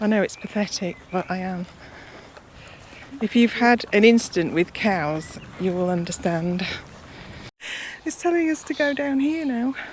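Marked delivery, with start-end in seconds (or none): 8.0-9.7 tiny squeak of a voice, very high. Passing by cows while scared of cows, very squeaky voice. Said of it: "She says in a very squeaky voice".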